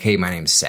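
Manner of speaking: ordinary talk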